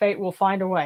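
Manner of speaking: mocking, dry, sarcastic delivery. Performing a quote after being asked for a sarcastic take: sarcastic.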